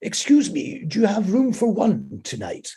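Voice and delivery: put-on very posh upper-class accent, high and swooping. Retelling a man knocking at the door, in a posh upper-class accent. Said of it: "this very posh voice spoke to me and he said".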